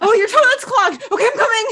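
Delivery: frantic, very high, loud, flustered rushed babble. Chatting with others, the speaker acts out how they imagine Will: imitating Will, mock-frantic. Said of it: "That's how I imagine Will".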